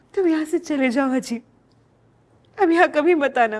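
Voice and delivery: weeping through words, tearful voice. Anjali, asked why she is crying, tells the other person to leave, crying while speaking. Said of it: "रो क्यों रही हो?".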